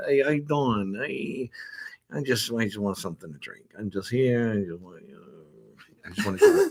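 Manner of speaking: full, goofy put-on character voice. Showing a character based on someone they know: imitating someone they know. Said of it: "whenever I goof on this person".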